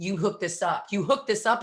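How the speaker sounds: urgent, pressing, insistent, repeated urging. Retelling a sponsorship phone call, yelling at the husband: imitating own yelling. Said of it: "I'm yelling at my husband".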